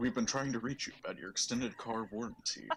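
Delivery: put-on very low, deep voice. Playing the voice that speaks through the pyramid, in a very low, deep voice. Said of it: "a very low, deep voice".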